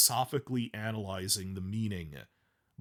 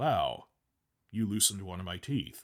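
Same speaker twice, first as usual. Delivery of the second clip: mock calm, dry, in-control understatement, no anger. Retelling how an actor delivered a line, saying it flatly. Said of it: "Just flatly".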